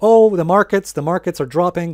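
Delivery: mock alarm, high-pitched and sarcastic. Mocking the mainstream media on falling markets: mock sarcastic media voice. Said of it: "I can't do the sarcastic voice".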